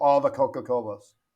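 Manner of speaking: imitated sarcastic tone. Retelling own reply to hearing all the coca-colas are hers: retelling own sarcastic remark. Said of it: "And I'm a sarcastic person".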